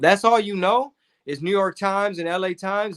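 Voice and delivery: ordinary talk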